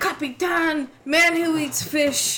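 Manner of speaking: put-on British accent. Joking about how a british man says methane: mock british accent. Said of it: "he's actually British, so it's, you know, methane".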